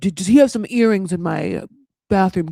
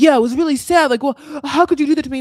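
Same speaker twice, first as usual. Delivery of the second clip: high-pitched, manipulative, guilt-tripping voice; 7 semitones higher than usual. Acting out Johnny guilt-tripping a woman after an apology: imitating Johnny. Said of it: "And he's like".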